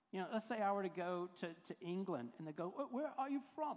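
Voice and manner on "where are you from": put-on English accent, pitched up. Imagining people in England asking where the speaker is from, English accent. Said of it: "That's my English accent".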